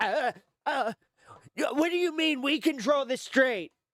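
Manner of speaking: very high-pitched, stammering, panicked voice. Retelling a reaction to news about the strait: imitating Donald Trump panicking. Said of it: "He was panicking".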